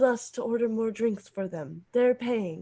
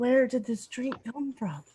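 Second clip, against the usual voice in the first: put-on baffled, puzzled, wondering tone; 2 semitones higher than usual. Planning a drink prank, imagining the recipients' reaction: mock-confused. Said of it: "They'll be so confused".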